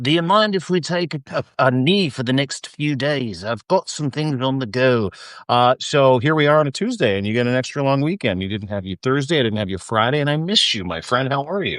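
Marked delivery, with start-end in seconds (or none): 0.0-5.1 put-on South African accent. Quoting the friend's phone request for days off, imitating a South African accent. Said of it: "in your trademark South African accent".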